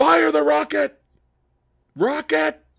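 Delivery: put-on shrill, very high, raspy, rough yelling. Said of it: "he just yelled at everything".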